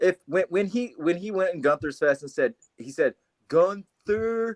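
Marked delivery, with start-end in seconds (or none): 3.5-4.6 put-on slow, stupid-sounding voice. Retelling what a wrestler said in another's face: slow, stupid voice. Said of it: "he says it in, like, this slow, stupid voice".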